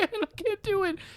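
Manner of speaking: put-on sobbing, very high-pitched crying voice. Retelling a TV teaser clip: imitating Jordan crying. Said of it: "It's Jordan crying".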